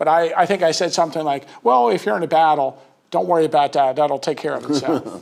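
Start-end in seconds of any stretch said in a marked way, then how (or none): 1.6-5.2 sarcastic delivery. Retelling an answer to a kid's question about battle: retelling own sarcastic reply. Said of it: "My initial comment is gonna be sarcastic".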